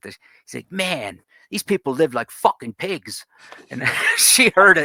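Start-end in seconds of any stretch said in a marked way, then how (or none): 0.7-3.3 put-on Delaware townie accent. Retelling what one of the guys said within Jill's earshot, Delaware townie accent. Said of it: "in his typical Delaware, the sort of the towny accent".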